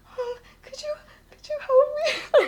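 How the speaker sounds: put-on very high, tearful, crying voice. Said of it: "tears are filling my eyes".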